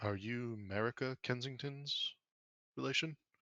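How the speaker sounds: hushed, quiet, cautious and wary. Game master voicing two wary characters questioning a player's character, quiet and wary. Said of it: "but then say quietly".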